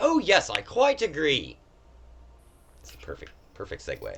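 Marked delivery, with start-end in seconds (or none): 0.0-1.6 odd, very high, very slow British gentleman voice. An unseen speaker chimes in after a player's remark, odd british gentlemanly voice. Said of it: "a kind of odd British gentlemanly voice".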